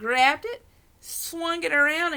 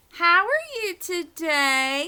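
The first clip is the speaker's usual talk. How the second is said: sweetest, very slow voice, "today" drawn out; 4 semitones higher than usual. Reading a story aloud, greeting a surprised Nana: sweetest voice. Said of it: "I said in my sweetest voice".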